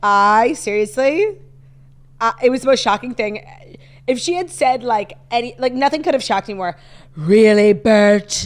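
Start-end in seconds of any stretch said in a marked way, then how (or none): 7.1-8.5 loud, raised, put-on British accent. Retelling the kid's shocking line, imitating Olivia's British accent. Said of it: "she said it with like kind of like a British accent".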